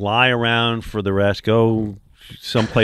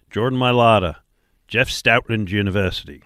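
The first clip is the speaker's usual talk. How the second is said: put-on, attempted Australian accent. Retelling a national TV game introduction, in a Jordan Mailata Australian accent. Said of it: "Don't know that my accent worked".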